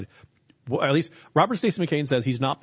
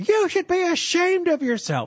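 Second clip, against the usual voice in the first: put-on woman's shriek, much higher; 3 dB louder than usual. Speaker retells a woman scolding a man waiting on his coffee, imitating a woman shrieking. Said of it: "this woman just starts shrieking at him".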